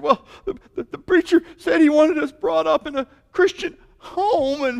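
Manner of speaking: mock sobbing child voice. Retelling what little Jimmy told them between tears, imitating Jimmy sobbing. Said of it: "between sobs and tears".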